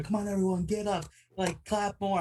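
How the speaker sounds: pushy, forced, over-eager, super enthusiastic delivery. A character urging everyone to get up and clap for her, super enthusiastic cheering. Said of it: "being super enthusiastic about worshiping her".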